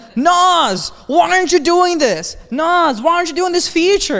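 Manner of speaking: very high-pitched, shrill, loud yelling. Retelling how everybody complains about missing features: imitating people yelling at him. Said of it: "everybody always fucking yells at me".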